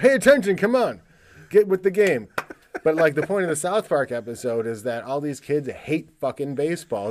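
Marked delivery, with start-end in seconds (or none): 0.0-2.3 raised, pitched-up, urging coaching yell. Showing what he wants to shout at his son: mock yelling. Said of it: "that's what I wanna yell at him".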